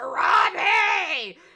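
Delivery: put-on villain voice, screaming. Retelling a scene from the movie, Scar screaming. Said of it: "Scar literally screams it in the movie".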